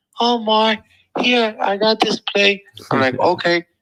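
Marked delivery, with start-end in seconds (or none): 0.2-2.6 slow, high, mild and unpushy way of talking. Speaker blames Kova and quotes what he said, imitating Kova's soft voice. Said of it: "he's got a soft voice".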